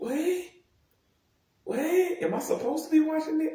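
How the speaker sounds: very high, incredulous squeak. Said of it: "I'm like".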